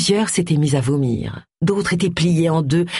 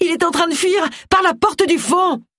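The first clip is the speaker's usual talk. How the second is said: very high, sudden crying out; 12 semitones higher than usual. A woman calls to her teammates as they enter the shop, crying out. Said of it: "Agatha s'écria".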